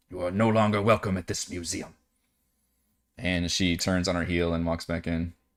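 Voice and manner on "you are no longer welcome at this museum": annoyed, gruff grunt, quick and low. Game master voicing an annoyed woman turning a player away from the museum, grunting. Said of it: "She just grunts and says".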